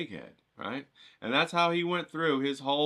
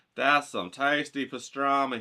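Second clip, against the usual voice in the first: plain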